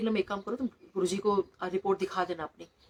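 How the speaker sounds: plain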